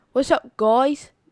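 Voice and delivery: put-on British accent in a man's voice. Recalling a man whose British accent was hard to understand, imitating Mister Cohen's British accent. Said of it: "British accent".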